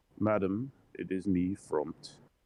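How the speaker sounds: weird, slow, drawn-out put-on voice. Game master voicing a character knocking at Phoenix's door, weird voice for Front. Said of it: "Weird voice".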